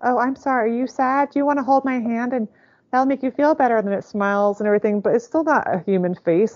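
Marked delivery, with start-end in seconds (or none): 0.0-3.9 high, mechanical robotic toy voice. Mocking a robot that claims to teach kids empathy, imitating a robot voice. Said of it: "it just still sounds like a robot".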